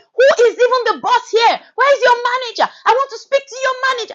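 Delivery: acted, shrill, high, insistent demanding shout. Recalling an argument about being sent back to the border, retelling own shouting. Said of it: "I was shouting".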